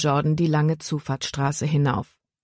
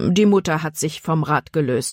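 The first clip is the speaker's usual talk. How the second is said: ordinary delivery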